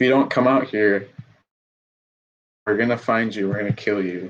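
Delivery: menacing, intimidating, threatening tone. A character calls out to someone hiding, making an intimidating threat. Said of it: "roll that intimidation".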